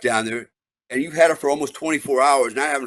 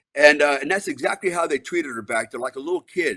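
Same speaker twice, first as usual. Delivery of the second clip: usual speaking voice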